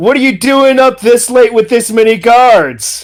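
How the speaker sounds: character voice called out loudly over a distance. Calling out in character to a prisoner being hauled off: yelling in character. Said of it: "I'll just yell".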